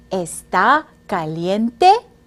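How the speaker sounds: pitch rises at the end of caliente. Demonstrating how to turn a statement into a spoken question: rising question intonation. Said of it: "hear the sound of my voice go up".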